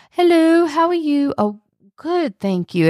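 odd, very high put-on British accent. Retelling a man answering the phone mid-rant, in a weird British accent. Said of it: "he gets like a weird British accent".

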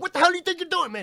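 mock angry shout, very loud, shrill and high. Retelling how a cop hopped out and yelled at the speaker, imitating an angry yell. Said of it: "He was angry, man, just yelling at me".

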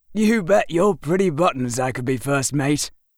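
sly, smug, self-assured, teasing tone. The narrator answers a woman who asks if he is too young: with a smirk. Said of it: "I said with a smirk".

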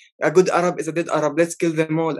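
ordinary talk

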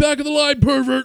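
shrill, high, shouted yell. Telling of a man cutting the line, the speaker retells their own yell. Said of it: "I yell out".

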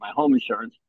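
usual speaking voice

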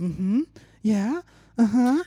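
drawn-out moaned uh-huhs.

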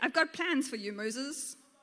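plain reading voice

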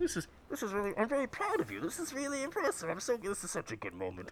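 put-on muffled voice. Mimicking what Israel would say while being dragged along, muffled Israel impression. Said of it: "You just hear a muffled Israel being like".

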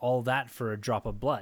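ordinary talk, nothing marked

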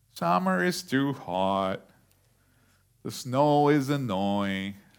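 slow, gloomy voice, every word drawn out. Talking about complaining, doing the Eeyore voice. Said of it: "I'm trying to do the Eeyore voice".

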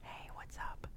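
hushed, faint, breathy, very quiet whisper. Joking about the new mic setup, imitating how the other speaker sounds: imitating Dragon whispering. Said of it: "it sounds like she's, like, whispering".

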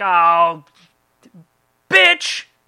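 awkward, badly done, very loud, swooping cursing. Retelling how a high school girl cursed badly: imitating Christine's clumsy cursing. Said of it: "she'd be like".

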